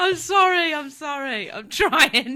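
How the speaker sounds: speaking through laughter. Apologizing while trying to get over a laughing fit, laughing while talking. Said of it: "apologising for my laughing fit".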